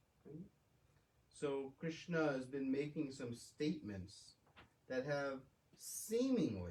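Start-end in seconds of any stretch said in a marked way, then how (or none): 5.7-6.7 heavy stress on seemingly. Speaker explaining a scripture chapter to listeners, stressing seemingly. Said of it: "I emphasize the word seemingly".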